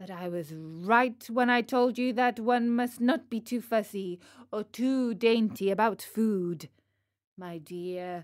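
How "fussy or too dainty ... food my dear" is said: ordinary delivery, nothing marked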